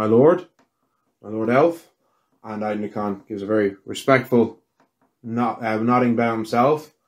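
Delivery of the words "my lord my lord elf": put-on very old man voice. Voicing a very old man bowing to an elf lord: Fergus O'Rourke voice. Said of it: "He's like".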